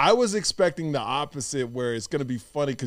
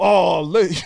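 put-on Australian accent, higher and louder; 4 semitones higher, 4 dB louder than usual.

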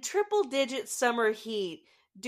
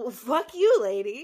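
snake character voice, louder; 5 dB louder than usual. Retelling a snake dropped on a woman, voicing the snake. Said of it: "the snake is like".

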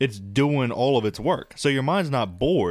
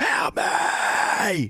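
high, whispered scream. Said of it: "like they were screaming, but it was kinda quiet".

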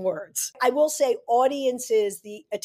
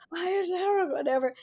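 wispy put-on voice, much higher in pitch; 7 semitones higher, 4 dB quieter than usual. Recalling how a girl talked in the ninth grade, in a wispy, almost Marilyn Monroe voice. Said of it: "she had this like wispy, almost like a Marilyn Monroe voice".

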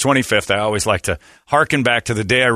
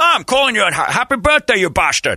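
put-on Scottish accent, pitched higher; 12 semitones higher than usual. Retelling a radio prank call, doing an over-the-top Sean Connery impression. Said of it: "My Sean Connery impression".

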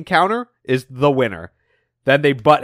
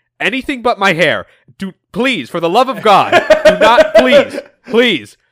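shrill, loud, pleading, begging scream; 5 semitones higher, 5 dB louder than usual. Retelling a comic scene where Snively begs over his hair: imitating Snively screaming. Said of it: "him screaming".

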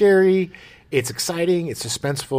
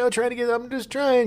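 put-on acted drunk man voice, higher; 11 semitones higher than usual. Retelling a movie scene, acting out the swimmer: imitating a drunk man. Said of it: "'cause he's so drunk".

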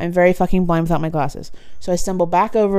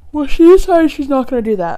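loud, higher-pitched speech through a yawn; 8 semitones higher, 7 dB louder than usual. Tired while telling a story, yawning while talking. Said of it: "Sorry, I'm yawning".

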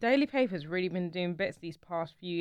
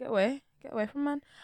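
put-on broken-English accent, pitched up; 5 semitones higher than usual. Imitating people reacting to a hug, in a put-on accent. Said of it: "Not the accent".

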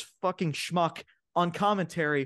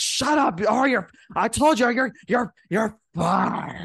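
put-on angry voice, higher and louder; 3 semitones higher, 6 dB louder than usual. Acting out an imagined boardroom scene as Vince McMahon: Vince McMahon impression. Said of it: "that's the best Vince McMahon impression".

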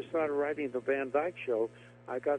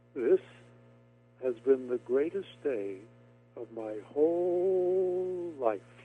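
tiny, small slow voice, whole line drawn out. Retelling his words after a long silent car ride, in Lucas Reiner's very quiet little voice. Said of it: "a very quiet voice".

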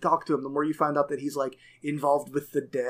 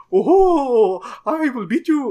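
very high, very loud lilting voice, "oh" stretched out; 9 semitones higher, 10 dB louder than usual. Imitating Wart, the round orc baker from the game: lilting Wart voice. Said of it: "he's got that kind of, uh, lilty type voice".

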